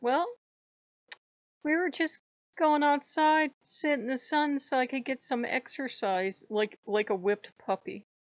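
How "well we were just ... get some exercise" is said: put-on sweetest high little old lady voice. Retelling what she said when called, in the sweetest old lady voice. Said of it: "in the sweetest old lady voice she can manage".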